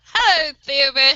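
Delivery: very loud, booming called-out voice. Playing a character who answers a knock on the door: very loud greeting. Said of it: "I'm very loudly say".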